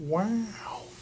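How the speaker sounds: very soft, breathy wow with long drawn O. Doing a practiced impression on request: Owen Wilson impression. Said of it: "pronounce the O a little bit more".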